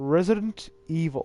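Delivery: announcer-style delivery with big pitch swoops. Recalling the third game's title announcer: Resident Evil 3 announcer voice. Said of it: "The announcer voice in three is good".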